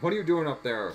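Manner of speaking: loud, berating, angry scolding tone. Speaker retells Potter on the phone with Charles: retelling Potter berating. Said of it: "Potter's berating him".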